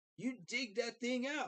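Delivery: worked up. Ranting to chat after losing to the Giants: worked up. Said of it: "I'm getting worked up again".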